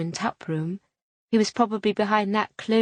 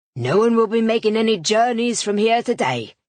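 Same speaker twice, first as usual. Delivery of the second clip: rough, gruff, raised voice; 2 semitones higher, 5 dB louder than usual. A man speaking up from the doorway, gruff voice. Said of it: "came a gruff voice at the door".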